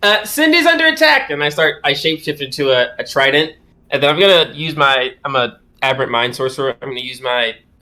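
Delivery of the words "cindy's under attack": shrill, very high, acted yell. Voicing a character warning the party during a fight: yelling in character. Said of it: "I yell".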